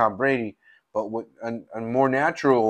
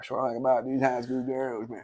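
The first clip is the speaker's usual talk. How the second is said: put-on Texas drawl, quieter; 7 dB quieter than usual. Trying a Texas voice after asking for one: bad Matthew McConaughey impression. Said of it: "I can't even do a good Matthew McConaughey".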